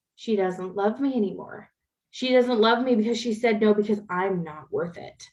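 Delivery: ordinary delivery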